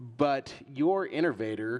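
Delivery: ordinary delivery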